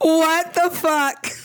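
very high, slow, stretched-out stunned disbelief.

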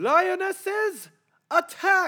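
high, loud fake yell with no menace. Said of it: "That didn't sound genuine at all".

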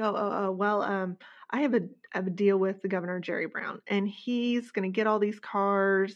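plain

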